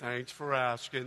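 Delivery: mock very low, soft, flat, unexcited, joyless voice. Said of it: "kinda like an Eeyore moment".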